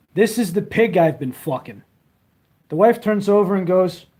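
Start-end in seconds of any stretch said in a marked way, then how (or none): none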